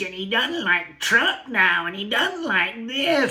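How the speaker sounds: mocking, tiny, high pipsqueak voice. Criticizing a guy he dislikes, the speaker is mocking his really little voice. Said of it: "he's got to talk like this".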